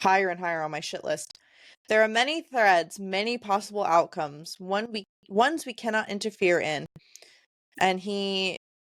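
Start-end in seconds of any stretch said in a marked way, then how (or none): none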